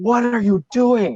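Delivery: put-on shrill, high, top-of-lungs yelling. Retelling how a man yelled at a student during a test, retelling a top-of-lungs yell. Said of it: "he yells like at the top of his lungs".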